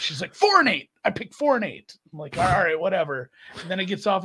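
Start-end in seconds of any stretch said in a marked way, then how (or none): 0.3-2.0 put-on high-pitched child's hollering yell. Retelling the daughter yelling her horse picks during the race, retelling a yell. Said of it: "And she's yelling".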